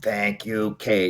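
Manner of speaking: small, little alien creature voice. Speaker describes a ride's ending where an alien thanks the rider: little E.T. voice. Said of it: "in that little E T voice".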